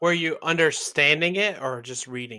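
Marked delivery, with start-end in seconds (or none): none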